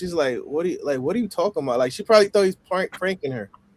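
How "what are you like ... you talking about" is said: mock incredulous, baffled, disbelieving tone. Retelling a caller's reaction to a strange question: imitating incredulous disbelief. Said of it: "she couldn't fathom it. Like, you could hear it in her voice".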